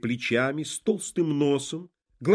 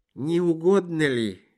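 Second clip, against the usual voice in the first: weak, barely audible, tired, feeble, worn-out voice. Narrator reads a tired man's words, weak, barely audible and tired. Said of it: "едва слышным от усталости голосом".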